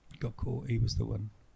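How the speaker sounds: put-on sad tone. Recalling a friend who would often get caught: mock sad voice. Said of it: "stop doing that sad voice".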